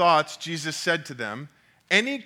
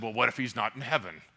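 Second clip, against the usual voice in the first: cheeky, smart-aleck, know-it-all tone; 5 semitones lower, 6 dB quieter than usual. Retelling a joke where a teacher retorts to a kid: imitating a smart aleck tone. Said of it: "in a smart aleck tone".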